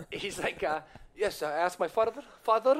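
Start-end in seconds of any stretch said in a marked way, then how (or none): 1.2-2.8 bad put-on Israeli accent, much higher, louder. Retelling what his dad said when he asked him, in a bad Israeli accent. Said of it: "I'm really bad at Israeli accents".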